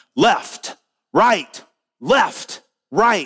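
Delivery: high, loud, called-out yelling.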